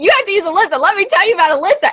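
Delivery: put-on aggressive, insistent tone. Retelling how her husband's ex-partner reacted to hearing she might move: imitating aggressive insistence. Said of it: "she just got kind of aggressive and was like".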